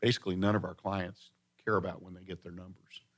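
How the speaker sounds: soft, hushed half-whisper. Retelling what the owner said about her clients: imitating a half-whisper. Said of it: "told me in a whisper".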